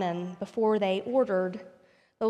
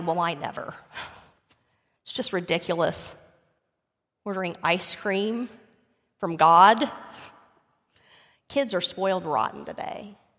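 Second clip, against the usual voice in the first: put-on huffy, disapproving, angry, indignant outburst; 2 semitones lower than usual. Retelling a story where a nearby diner objects: imitating a loud angry remark. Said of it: "She said very loudly".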